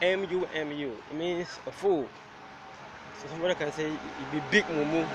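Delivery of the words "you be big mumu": ordinary delivery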